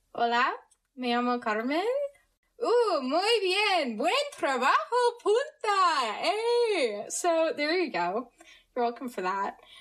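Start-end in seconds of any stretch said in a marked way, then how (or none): 0.2-6.1 amateurish attempted Spanish accent at a higher pitch. Saying something in spanish for the audience, attempted spanish accent. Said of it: "Me actually trying to do an accent".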